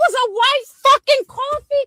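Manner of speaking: shrill, very high screaming. Answering someone who wants to search your car, screaming. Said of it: "you screaming?".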